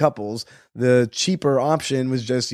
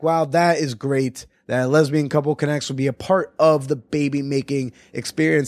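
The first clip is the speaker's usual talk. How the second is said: ordinary delivery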